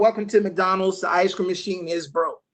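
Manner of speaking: ordinary talk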